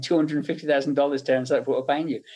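usual speaking voice

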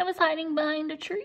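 squeaky, high, frightened little voice. A boy frozen amid a bee swarm explains to his friends, squeaked. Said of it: "Tom squeaked".

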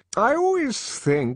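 very high, soppy, sentimental, maudlin tone. The director, watching two kids fool about, continues in a rather maudlin tone. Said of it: "in the same rather maudlin tone".

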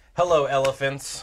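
dry, flat, deadpan delivery. Greeting cards just played on the table: deadpan. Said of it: "deadpan that was".

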